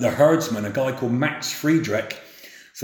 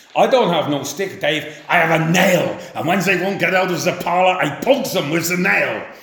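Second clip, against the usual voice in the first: put-on German-accented voice, pitched up; 6 semitones higher, 4 dB louder than usual. The speaker retells a conversation with Max, imitating Max's German accent. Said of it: "he would say to me in a German accent".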